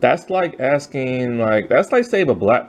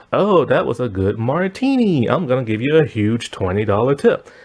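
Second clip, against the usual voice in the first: ordinary talk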